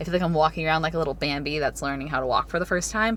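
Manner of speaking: normal talking voice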